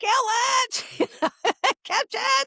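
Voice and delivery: very high scream with drawn-out "it". Telling how a detection dog met a rat, retelling a scream. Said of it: "and I'm screaming".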